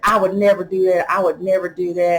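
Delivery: ordinary delivery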